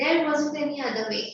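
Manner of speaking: plain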